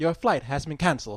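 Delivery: soft, mechanical, automated recorded-message voice. Retelling a call from the airline: imitating a mechanical recorded voice. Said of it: "little mechanical voice on there".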